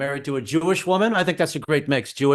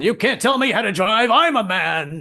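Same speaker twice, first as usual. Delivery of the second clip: high yell with the word "man" drawn out; 7 semitones higher, 4 dB louder than usual. Retelling yelling back at his wife while driving: retelling his own yell. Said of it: "And I yell back".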